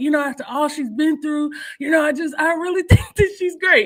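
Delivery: hoarse put-on voice. Imitating another speaker's voice in a chat: imitating Eric's hoarse voice. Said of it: "I don't sound hoarse like that".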